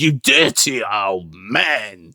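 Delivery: very slow speech with a mild lisp. Showing how this voice differs from the Terrence Dicks ones, in a slightly less lispy impression. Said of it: "he's sort of very much like this".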